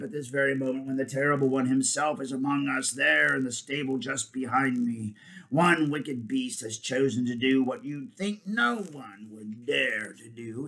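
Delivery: ordinary delivery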